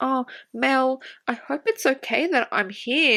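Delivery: high, sweet, flirty, coy and ingratiating voice. Retelling what Evie said to Mel, mock-flirty Evie impression. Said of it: "bats her eyelids and goes".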